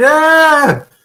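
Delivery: high, loud, excited cheering yell. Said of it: "you hear my wife and [name] in here yelling".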